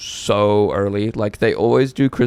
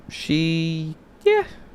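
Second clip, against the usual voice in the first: high, unconvincing fibbing tone, "she" stretched out; 8 semitones higher than usual. Backpedalling after a joke about the listener's mum, in a high-pitched unconvincing voice. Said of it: "Why'd you do a high-pitched voice like you were lying?".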